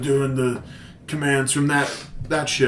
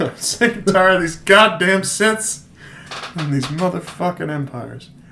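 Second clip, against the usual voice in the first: dramatic action-movie style delivery, pitched higher; 5 semitones higher than usual. Joining in on bringing back Sam Jackson: Sam Jackson impression. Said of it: "let's bring back Sam Jackson".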